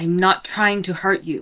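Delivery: low, growling voice through the line. Narrating a scene, the speaker voices a woman held in a grapple, growling her reply. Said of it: "and then she just growls".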